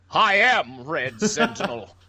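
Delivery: slow, lofty, heroic superhero voice. Saying a username after another speaker asks: superhero voice. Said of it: "You should say that in, like, a superhero voice".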